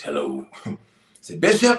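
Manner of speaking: put-on voice, very sing-song and swooping.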